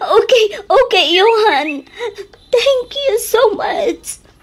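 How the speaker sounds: high, tearful speech while crying. Auntie thanks Johan for his help, crying while talking. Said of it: "Just stop crying".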